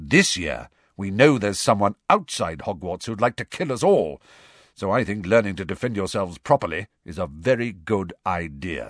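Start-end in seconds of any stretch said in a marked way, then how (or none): none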